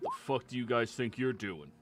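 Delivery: angry, aggressive, hostile guard voice, swooping pitch. Voicing a guard who confronts the party at the prison: angry prison guard. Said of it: "one of the guards immediately steps forward".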